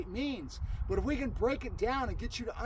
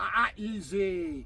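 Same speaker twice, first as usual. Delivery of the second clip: deep baritone, low and stern, easy drawn out; 3 semitones lower than usual. Dog training, giving the dog a negative cue, low chastising tone on easy. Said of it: "very chastised. And I went down to a really low baritone".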